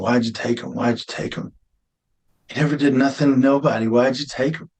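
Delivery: broken, crying, sobbing pleading outcry. Recalling breaking down on the ground after his son was taken, retelling his own crying. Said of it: "broken shell on the ground crying".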